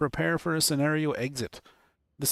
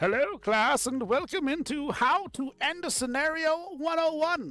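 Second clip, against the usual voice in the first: goofy, very high, slow put-on voice; 11 semitones higher than usual. Opening a mock class on ending a scenario, in a silly voice. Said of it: "Let's do a silly voice".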